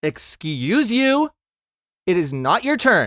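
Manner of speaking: sassy, indignant tone. In a tabletop game, answering a voice that called out from the line: sassy comeback. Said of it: "she like sassily".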